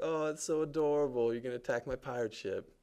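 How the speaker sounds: slight put-on Jamaican accent, pitched high. Voicing what a clapping woman seems to be saying, in a little jamaican accent. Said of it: "A little Jamaican styly".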